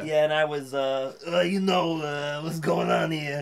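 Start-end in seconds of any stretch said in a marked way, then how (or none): 1.3-3.4 New York construction worker voice. Replaying a role once voiced: Herman the Elf voice. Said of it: "you were Herman the Elf".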